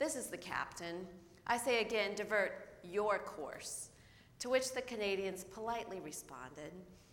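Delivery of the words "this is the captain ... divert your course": plain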